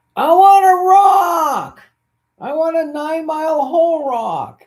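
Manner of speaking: put-on shrill, very high, very loud, drawn-out child scream. Retelling a movie scene where a kid answers his father: imitating a kid yelling. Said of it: "the kid yells back".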